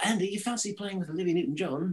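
fake hammy English accent. Speaker retells an invitation he got to play: bad English accent. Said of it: "here's my bad English accent".

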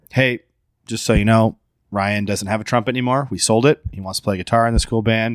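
ordinary talk

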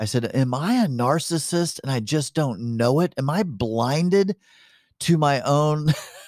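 sobbing, tearful voice, high and slow. Recalling a therapy session, the speaker quotes their past self: retelling words said through tears. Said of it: "And through my tears".

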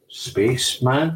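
plain

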